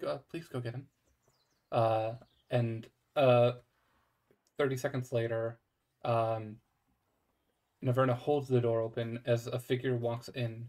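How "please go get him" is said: very quiet, soft, hushed, barely-there voice. Game master voicing someone heard at an opened door, very quiet voice. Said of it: "you hear very quiet".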